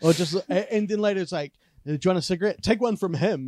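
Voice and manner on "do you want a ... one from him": over-the-top, hammy, big theatrical overplayed delivery. Describing a film scene, the speaker acts out Lawrence's lines: exaggerated Lawrence impression. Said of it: "your performance right now is so much bigger".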